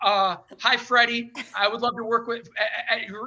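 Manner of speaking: mock stumbling over words. Retelling approaching a man at his table, acting out stumbling over words. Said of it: "I was like stumbling over my words".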